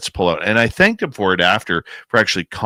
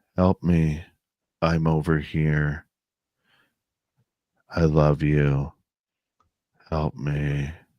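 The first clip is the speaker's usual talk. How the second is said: level, inflectionless, creepy, eerie monotone drone; 4 semitones lower, 5 dB quieter than usual. Retelling what a voice calling for help said, in a flat monotone. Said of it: "but to hear that monotone".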